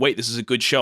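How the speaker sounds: ordinary talk, nothing marked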